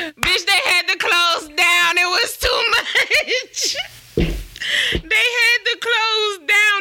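laughing very hard, cracking up.

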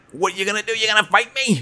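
squeaky, very high, loud cartoon-style voice, belted. Talking about the Popeye movie, doing a Popeye voice. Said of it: "I felt like that was an okay Popeye".

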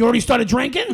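put-on very loud, high, grouchy girl voice. Retelling meeting a girl, quoting what she first asked: girl Oscar the Grouch voice. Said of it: "it was like Oscar the Grouch. But in girl".

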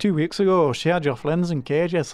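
attempted Cornish accent. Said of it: "That was my Cornish impression".

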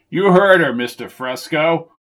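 firm, authoritative, commanding voice. Reading a story aloud, a character backs up the mother's order to Dan: authoritative voice. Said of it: "said Cal in an authoritative voice".

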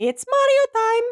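very high, squeaky, loud, baby-like bad cartoon voice. Asked by a co-host to do a final Mario: Mario impression. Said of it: "Do your Mario".

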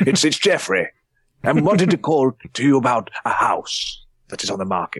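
mock elderly man voice. Retelling phoning work pretending to be someone else: imitating an old man. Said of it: "I've pretended to be an old man".

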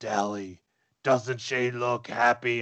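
disguised, warped-sounding, put-on distorted voice. Narrating home video footage, voicing the voice heard in it, distorted voice. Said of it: "I'm trying to do a distorted voice".

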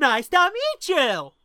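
put-on overly enthusiastic, high, very loud, overeager voice. Mocking how a character greets Obi-Wan in a scene: overly enthusiastic Anakin impression. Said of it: "Anakin's, like, overly enthusiastic".

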